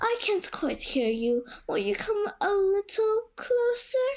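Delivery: weak, feeble little voice. Reading the fox's words to Johnny Cake in the tale, feeble voice. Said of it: "said the fox in a feeble voice".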